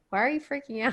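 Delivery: acted out dry, flat, expressionless deadpan delivery. Retelling a co-host's reaction to Andrew freaking out during a game: imitating a deadpan reply. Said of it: "Like it was so deadpan".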